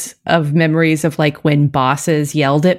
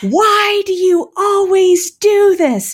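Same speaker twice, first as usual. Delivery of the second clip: put-on, shrill, very high scream. Telling about running into her boss's office, retelling a scream. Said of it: "I screamed".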